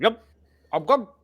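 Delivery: loud, high, muffled talk through stuffed cheeks. Voicing a character with gruel stuffed in his cheeks: speaking with mouth full of food. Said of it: "he's squirreled away some gruel in his cheeks".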